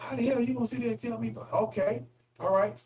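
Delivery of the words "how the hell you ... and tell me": put-on angry voice, very high pitch. Role-playing how he would answer back if he were that guy: mock-angry voice. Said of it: "now say it in your angry voice".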